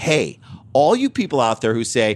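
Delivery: plain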